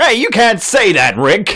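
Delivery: very high, loud, swooping cartoon-dad voice. Called a real Jerry by his podcast co-host, he answers with a Jerry impression. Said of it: "I did my best Jerry impression".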